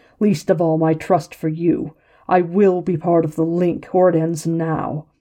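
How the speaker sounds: snarling. The scarred man answers a challenge to his demand, growled. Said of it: "the scarred man growled".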